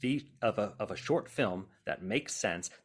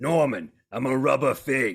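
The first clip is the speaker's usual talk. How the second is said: very loud, goofy, silly houseplant character voice; 3 semitones higher, 8 dB louder than usual. Actor demonstrating the houseplant character he plays, Norman the houseplant voice. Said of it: "Norman liked to talk like this".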